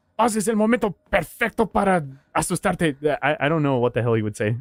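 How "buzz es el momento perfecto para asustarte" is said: pitched-up voice speaking Spanish.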